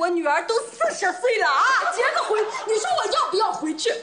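loud, high-pitched, exaggerated tearful crying complaint.

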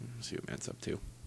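hushed whisper.

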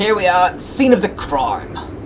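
put-on British-accented speech.

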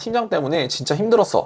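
plain

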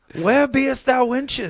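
very high, very loud viking warrior holler. Describing Matt coming in dressed as a Viking, Matt's Viking voice. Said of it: "Matt comes in as a Viking like".

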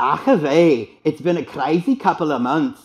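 put-on Welsh accent. A host tries out an accent at the end of the show, put-on welsh accent. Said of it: "that's Welsh".

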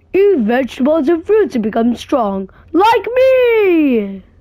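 put-on sing-song character voice, drawn-out "me". Reading out a character's line, doing a character impression of this character. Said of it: "Please tell me that was a good impression".

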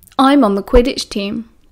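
ordinary delivery

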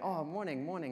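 mock sunny, cheerful, friendly, playing-dumb tone. Retelling playing dumb to the two men: imitating own cheerful greeting. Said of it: "I just cheerfully again say".

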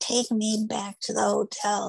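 mock scream, toned down to a mild yell. Retelling screaming at a cab driver: imitating own screaming. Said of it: "screaming at him".

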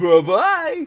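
goofy, high, loud cartoon dinosaur voice. While gaming, the player waves off retreating enemies in a Barney voice. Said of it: "Did I just go into a Barney voice?".

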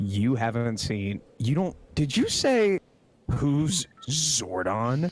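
low, slow condescending drawl. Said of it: "you had a more condescending reaction".

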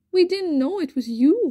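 gasping. Narrator reads Alfie answering Mother Fox from the hole, gasped. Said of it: "gasped Alfie".

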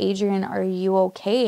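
ordinary talk

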